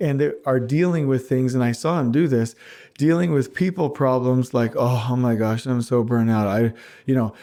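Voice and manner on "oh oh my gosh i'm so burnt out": mock low-energy, unenthusiastic, passionless voice. Imitating a burnt-out person dealing with people problems: mock low-energy voice. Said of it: "with no passion, no enthusiasm".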